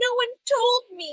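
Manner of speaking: mock very high, slow, drawn-out weepy sob. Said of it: "where she's, like, crying".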